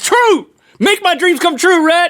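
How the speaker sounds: high-pitched yelling shout. Calling out the answer true during a game, shouting.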